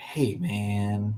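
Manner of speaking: laid-back, drawn-out hippie surfer dude drawl, male voice. Acting out own inner voice in third person: hippie surfer dude voice. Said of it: "I sound like a hippie surfer dude".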